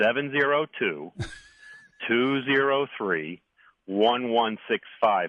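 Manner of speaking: slow, easy delivery, each digit spaced apart. On a radio show, the speaker repeats a phone number, really slow and easy. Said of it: "say it really slow and easy so people have a t- time to write it down".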